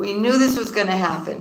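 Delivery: this strongly stressed, with falling end. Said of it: "And we knew this was gonna happen".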